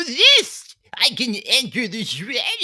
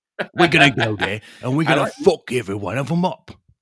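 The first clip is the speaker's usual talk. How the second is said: very low-pitched, deep East London accent; 10 semitones lower than usual. Doing a requested Billy Butcher impression: Billy Butcher impression. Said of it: "you could probably do a Bill-, a Billy Butcher".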